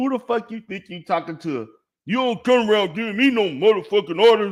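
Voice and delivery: furious, angry, confrontational outburst. Reacting to a clip and mimicking the man in it: mocking imitation of an angry man.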